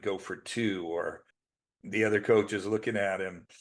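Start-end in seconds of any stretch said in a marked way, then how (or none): none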